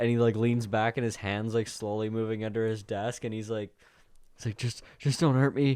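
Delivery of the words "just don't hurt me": put-on high, frightened pleading on the edge of panic. Retelling a man who thinks he is being robbed, imitating panicked pleading. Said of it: "breathing heavy and like it's like starting to panic".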